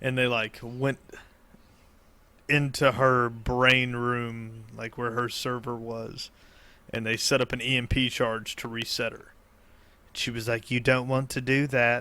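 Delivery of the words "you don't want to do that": attempted put-on British girl accent. Retelling a story, quoting a female character's warning in an attempted British girl accent. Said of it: "are you trying to be like a British girl".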